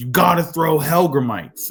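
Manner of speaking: angry, insistent tone. Retelling a fishing argument over bait, imitating an angry man. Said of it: "Like he gets angry".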